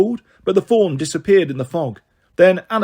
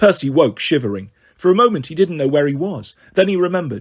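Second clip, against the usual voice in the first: plain reading voice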